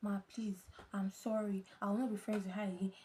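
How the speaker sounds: pleading, begging tone. Retelling how they begged their mother after being caught: retelling own begging. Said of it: "I started begging".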